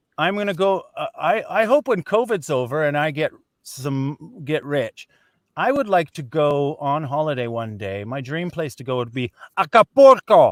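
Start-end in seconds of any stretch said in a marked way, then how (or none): 8.1-10.5 very loud Spanish accent. Trying out an English sentence with a Spanish place name: Spanish word in Spanish accent. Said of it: "Does that sound right?".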